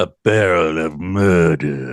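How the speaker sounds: very low, deliciously menacing, ominous, drawn out. Quoting a killer cocktail clue phrase, ominous delivery. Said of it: "And you have to kind of say it like that".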